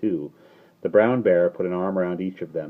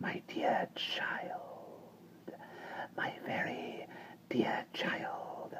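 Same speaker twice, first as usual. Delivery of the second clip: delicate, hushed, small hissing whisper. Narrating a voice from the largest cage, small, delicate hissing voice. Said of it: "said a small, delicate, hissing voice".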